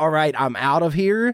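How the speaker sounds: ordinary talk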